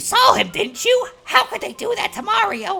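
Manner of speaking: very high, poorly done put-on cartoon character voice. Trying out a voice for a Mario line, Toad voice. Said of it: "this is the one Toad voice I'm going to try to do".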